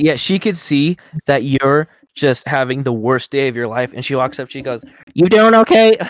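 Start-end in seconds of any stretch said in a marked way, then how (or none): 5.1-6.0 very high-pitched, loud, raised voice. Retelling how Susan checks in: imitating Susan's voice. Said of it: "the quality of the mic changed every time he went into, to her voice".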